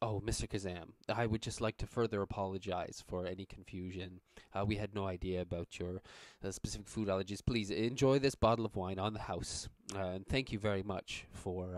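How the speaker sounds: ordinary delivery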